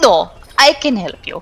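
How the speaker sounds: put-on, loosely Eastern European accent. A character answers visitors asking who can help them, vaguely Eastern European accent. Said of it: "Sexy, vaguely Eastern European accent?".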